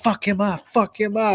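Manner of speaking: mock heated angry urging. Retelling a man yelling at his security, mock-angry yelling. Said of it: "he was yelling at his security".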